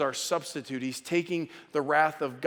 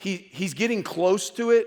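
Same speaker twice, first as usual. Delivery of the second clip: usual speaking voice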